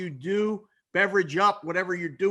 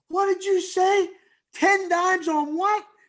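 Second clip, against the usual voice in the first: put-on very high, shrill, raised scream; 12 semitones higher, 5 dB louder than usual. Retelling taking bets across the counter at halftime: retelling own scream. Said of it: "I'm screaming across the counter".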